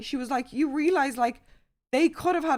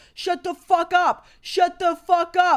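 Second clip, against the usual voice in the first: mock angry screaming, higher, louder, slower; 5 semitones higher, 8 dB louder than usual. Speaker retelling a fight, quoting a man screaming back at someone: retelling an angry scream. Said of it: "he's screaming back at Lewis".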